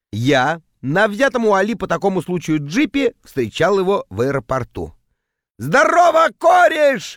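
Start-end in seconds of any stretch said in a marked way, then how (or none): 5.5-7.1 put-on very high, wild, loud drunken hollering. Narrator reads an arriving man greeting his pal at the airport: drunken yell. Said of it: "заорал он дурным пьяным голосом".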